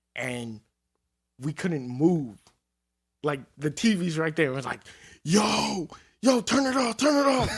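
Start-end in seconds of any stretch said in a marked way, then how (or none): 5.3-7.5 mock, very high-pitched, repeated yell. Retelling yelling to a roommate during a bad trip: imitating own past yelling. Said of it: "yelling to my roommate".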